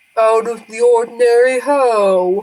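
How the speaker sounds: deep bassy turtle voice with drawn-out "how". A sea turtle asked about anything out of the ordinary last night replies: bassy sea turtle voice. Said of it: "a sort of bassy voice is like".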